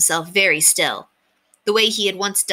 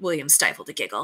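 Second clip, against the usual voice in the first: plain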